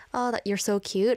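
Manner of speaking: normal talking voice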